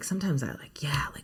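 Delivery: gentle, soft, confiding whisper.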